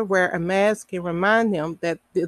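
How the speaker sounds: ordinary delivery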